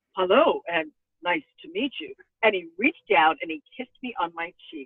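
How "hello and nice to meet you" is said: suave, smooth, swaggering, charming tone. Retelling how the President greeted the speaker: imitating the President's swagalicious voice. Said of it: "in his swagalicious voice".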